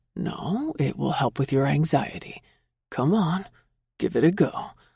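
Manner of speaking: completely calm, steady, level voice. Reading a story, a character soothing a panicking flyer: extremely calm voice. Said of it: "in an extremely calm voice".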